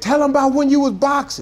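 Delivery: very high, shrill, hollered out. Retelling a woman calling out to him on stage: imitating someone hollering. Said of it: "She just hollered out".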